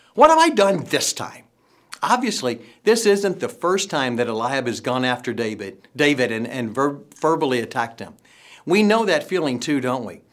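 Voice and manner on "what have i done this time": put-on exasperation, louder and higher pitch. Retelling what a man said when verbally attacked yet again, acting out exasperation. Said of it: "can't you just hear the exasperation in David's voice".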